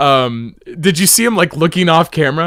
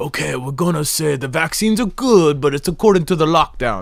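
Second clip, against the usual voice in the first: mumbled, mock British accent. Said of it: "why am I talking like that anyway".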